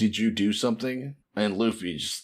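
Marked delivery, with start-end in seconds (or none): none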